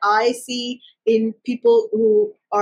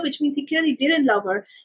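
plain

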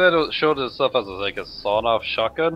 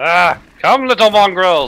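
loud, fake put-on Irish brogue; 8 semitones higher, 8 dB louder than usual. Fighting in a game in a joke Irish persona, put-on Irish accent. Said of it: "This is the luck of the Irish".

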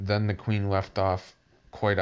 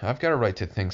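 ordinary delivery, nothing marked

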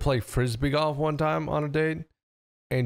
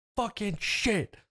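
put-on mad, frustrated, angry swearing; 7 semitones higher, 4 dB quieter than usual. Retelling how a date swore after a bad Frisbee throw: imitating an angry curse. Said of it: "she was getting, like, really mad".

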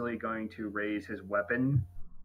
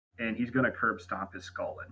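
ordinary delivery

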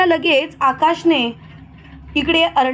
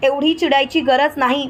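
ordinary delivery

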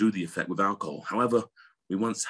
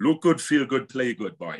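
raised, high-pitched Welsh accent, played up for show; 5 semitones higher, 5 dB louder than usual. Asked by the host to repeat the last sentence, in a welsh accent. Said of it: "I just want to hear your Welsh accent".

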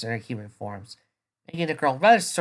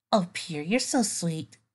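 high, adoring, affectionate coo; 5 semitones higher than usual. Narrator reading a young woman's words to her boyfriend, cooing. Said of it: "Twilight cooed".

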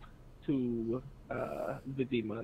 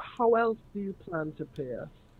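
mild, pointed, gentle, pitched up, loud enough for all; 6 semitones higher than usual. Player's character leaning in toward the others after the knife, very soft.

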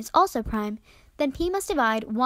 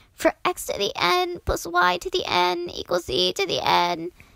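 croaking like dying, higher pitch; 6 semitones higher than usual. Narrating math history, acting out a dying mathematician's words, croaking as dying Fermat. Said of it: "croaked out".

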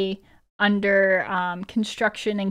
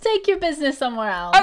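speaking through laughter, higher pitch; 6 semitones higher, 3 dB louder than usual. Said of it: "Yash laughs and says".

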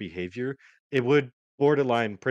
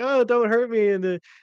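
put-on very high, loud, pained voice; 13 semitones higher, 7 dB louder than usual. Retelling how she bends over in pain and plays the victim: imitating a fake pained plea. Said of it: "bends over in pain, and she's like".

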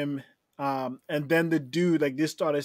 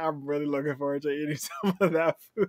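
ordinary talk, nothing marked

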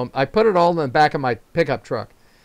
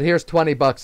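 normal talking voice

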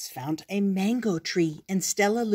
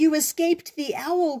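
high, cried-out exclamation in a bat voice; 8 semitones higher, 3 dB louder than usual. Narrator reads Stellaluna speaking to the mother bat: cried out. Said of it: "cried Stellaluna".

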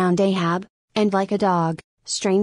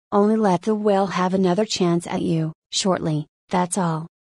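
ordinary delivery, nothing marked

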